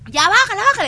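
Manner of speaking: loud high-pitched shouting.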